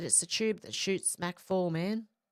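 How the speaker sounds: ordinary delivery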